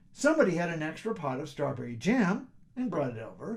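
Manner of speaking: plain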